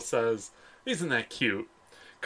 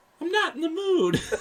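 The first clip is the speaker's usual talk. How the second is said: put-on very high baby voice. Speaker retelling a scene, giving Carl's line in a baby voice. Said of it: "in like a baby voice".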